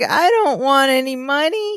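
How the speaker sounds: put-on sweet Southern accent, high, slow drawl. Retelling a sitcom character's line: Leslie Jordan accent. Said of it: "in that same Leslie Jordan accent".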